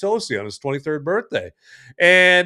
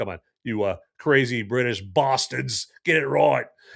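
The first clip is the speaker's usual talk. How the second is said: sudden put-on Australian accent; 5 semitones lower, 4 dB quieter than usual. Telling British people what to call fish and chips, in an Australian accent. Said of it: "I don't know why I just did an Australian accent".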